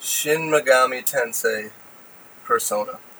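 drawn out, slow, careful, word by word. Naming a game title in turn, said real slow. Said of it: "I'm gonna say this one real slow".

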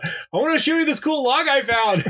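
mock yelled-out call, voice very high. Recalling a walk in the park, the speaker repeats what they yelled; retelling a yell. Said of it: "I just yelled out".

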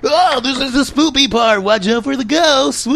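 high-pitched cartoon hero style voice. Recounting talking to himself while recording a game video: Sonic the Hedgehog voice. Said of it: "In that Sonic the Hedgehog voice".

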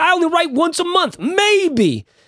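very high-pitched voice. Retelling what Derek says about publishing: Derek impression. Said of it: "That's my Derek impression".

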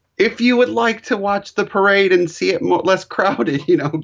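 high, pleading, begging announcer voice. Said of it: "It almost sounded like they were begging".

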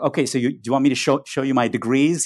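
dry, slightly sarcastic, mildly sardonic tone. Retelling a dancer's line to the audience: imitating a slightly sarcastic dancer. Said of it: "said in a kind of slightly sarcastic, slightly sardonic way".

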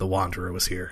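hushed whisper, under the breath. In a role-playing game, a player's character stamps a rock: whispering under breath. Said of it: "I'm going to whisper under my breath".

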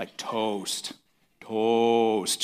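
deep, drawn-out, practised delivery, each phrase stretched long. Retelling someone practicing at the mirror: deep drawn-out 'toast'. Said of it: "trying to draw his voice out lower".

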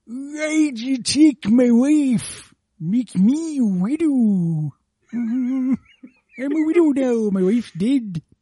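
put-on very slow, loud, raging old man voice. In a rapid-fire bit, grandpa is angry at god: angry grandpa voice. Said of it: "Grandpa's angry at God".

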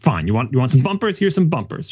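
defensive, on-the-back-foot tone. Retelling how he answered at the conference: imitating a defensive tone. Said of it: "like he was defensive".

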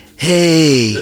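high, loud mock heckler voice.

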